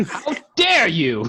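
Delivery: woman's voice, called out. Player voicing a woman during a tabletop game, woman's voice. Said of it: "In the woman's voice".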